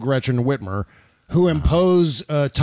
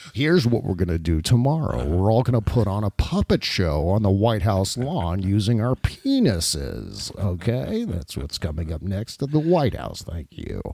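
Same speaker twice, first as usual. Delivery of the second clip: low, calm, measured, dead-level tone; 6 semitones lower than usual. Speaker demonstrating a politician's delivery trick, doing a Dick Cheney impression. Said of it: "That's the Dick Cheney technique".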